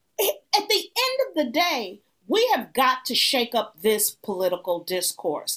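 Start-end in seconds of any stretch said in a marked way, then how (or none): none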